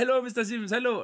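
put-on Indian accent. Patient imitates his longtime dentist greeting him, in a put-on indian accent. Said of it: "I'm sorry about the accent".

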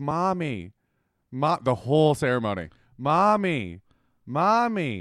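put-on whining child voice. Describing a little boy calling for his mommy during a ceremony, imitating a whining child.

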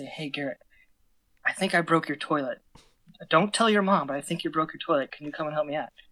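discreet hushed voice. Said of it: "I'm just trying to be discreet".

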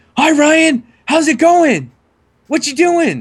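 mock very high, booming, swooping sing-song. Retelling how a boy who comes in greets him: imitating someone talking loudly. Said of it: "he talks really loud".

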